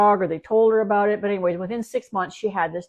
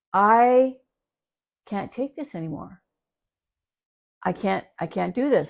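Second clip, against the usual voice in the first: tearful, frustrated, near tears, at wit's end. Retelling a dog owner arriving at the door, the speaker imitates her in tears. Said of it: "she's literally in tears".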